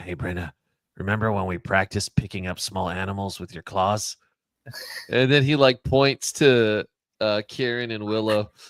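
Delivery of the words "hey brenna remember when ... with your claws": soft, hushed, secretive half-whisper. A tabletop player, in character, speaks to a companion mid-scene; half-whispering. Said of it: "he whispers to Brenna".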